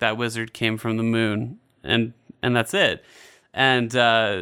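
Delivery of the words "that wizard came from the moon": flat, mock-deadpan delivery. Speaker retelling a character's remark the internet loved, imitating deadpan delivery. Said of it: "he just says it in the most deadpan way ever".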